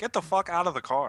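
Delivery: very, very calm, slow delivery. Acting out a monk pulling someone from a car: imitating a very calm demand. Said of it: "Very, very calmly, he's like".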